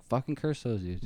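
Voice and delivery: normal talking voice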